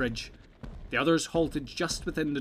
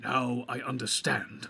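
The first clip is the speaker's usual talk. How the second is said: muttered and mumbled, slower. Narrator reads a character recognizing the fiery figure approaching, muttered. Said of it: "muttered Gandalf".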